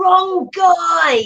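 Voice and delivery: high, angry, confused shout. Voicing a character who corrects a raging ally mid-fight: Bane yelling. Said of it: "Bane just yells".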